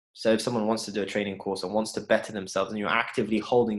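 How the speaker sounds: normal talking voice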